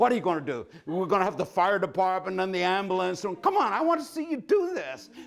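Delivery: high, rising, raving shout like a madman. Recounting shouting all the way through the Yerba Buena tunnel: retelling a mad shout. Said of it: "shouted like a madman all the way through".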